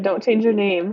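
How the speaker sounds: usual speaking voice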